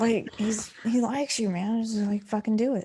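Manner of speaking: whispered aside. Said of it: "I kinda whisper".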